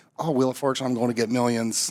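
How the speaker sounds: plain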